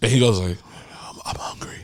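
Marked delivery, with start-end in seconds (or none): 1.1-1.8 put-on quiet drunk voice, quieter. Retelling what a friend said at a night out: imitating a friend, quiet and drunk. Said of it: "he gets real quiet when he's drunk".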